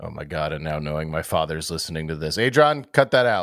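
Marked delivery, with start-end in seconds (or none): 2.4-3.4 high-pitched shouted call. Speaker calls out to adrian to cut a remark from the recording; yelling to adrian. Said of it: "Sorry for yelling".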